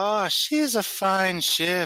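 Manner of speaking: very high, put-on young girl's voice. Speaker, voicing one of several characters, answers in a young girl's voice. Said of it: "like a young girl's voice".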